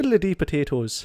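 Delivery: put-on Irish accent. Asked by another speaker whether one can be done: Irish accent. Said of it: "can you do uh, an Irish accent?".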